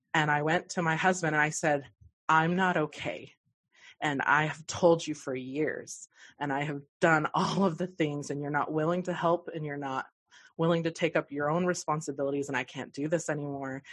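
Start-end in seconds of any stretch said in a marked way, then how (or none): none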